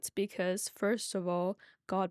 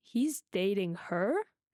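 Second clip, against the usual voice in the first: pitch climbs on the last word "her". Explaining question intonation, asking with rising pitch on her. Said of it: "if you ask a question at the end of the sentence, your tone automatically rises".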